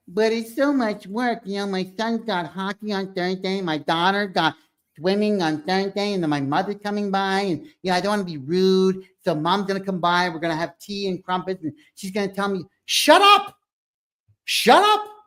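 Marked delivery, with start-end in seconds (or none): 0.2-12.7 mock whiny childlike voice. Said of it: "it sounds like a child".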